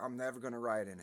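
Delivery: ordinary delivery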